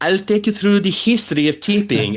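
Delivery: heavy put-on Italian accent. Describing a hotel concierge from a TV show, the speaker imitates her thick Italian accent. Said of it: "she has this thick Italian accent".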